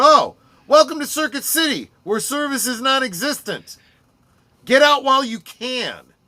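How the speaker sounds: high, loud announcer-style voice. Speaker acts out what they would have said in the store, retelling a raised voice. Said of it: "I'd have raised my voice and said".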